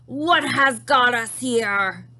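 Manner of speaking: thundering, booming giant voice, very slow. Narrator reads the giant's line as he walks forward, booming giant voice. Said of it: "His booming voice rolled around the walls".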